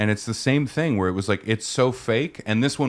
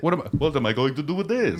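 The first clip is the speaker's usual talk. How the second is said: put-on vampire voice, high-pitched; 5 semitones higher than usual. Acting out a bit, the speaker slips into a vampire voice. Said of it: "I didn't mean to do vampire voice".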